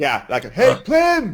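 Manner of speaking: shouting. Calling out to plim, who is high up on a mast, yelling out. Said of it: "are you yelling that out".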